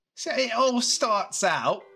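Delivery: high-pitched put-on British accent. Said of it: "You want a you British accent, huh?".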